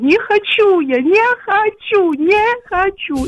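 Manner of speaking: play-acted hysterical wail, very high, very slow, drawn out. Retelling what he shouted while running down the stairs to her; imitating hysterical crying and shouting. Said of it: "Кричить істерично плаче і кричить".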